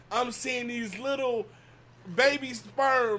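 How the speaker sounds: words coming out through laughter. Speaker apologizes to the listener mid-story, laughing while talking. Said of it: "I'm sorry, I'm laughing".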